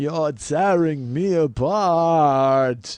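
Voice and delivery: very slow put-on voice, apart stretched long. Quoting a line from Earth Girls Are Easy: Jim Carrey as James Dean. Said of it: "That's my impression of Jim Carrey doing an impression of James Dean".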